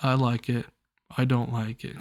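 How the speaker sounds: soft, dull, flat monotone delivery. Imitating how a character in the series talks, monotone. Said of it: "He talks like this. He says".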